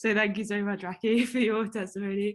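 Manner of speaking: voice breaking with tears, crying through the words. Thanking a speaker for their testimony: crying while talking. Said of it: "Sorry, I'm actually crying".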